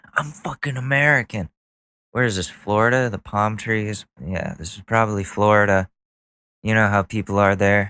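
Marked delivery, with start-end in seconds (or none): 0.1-1.4 put-on angry ranting voice, higher. Retelling a person in a video pointing at people with accents: imitating someone getting mad. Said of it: "getting mad at them all and going".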